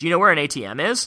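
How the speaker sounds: pitch climbs on "ATM is", upward lilt on "is". Demonstrating how a question's tonality goes up: pitch rises at the end. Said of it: "a question, your tonality goes up at the end".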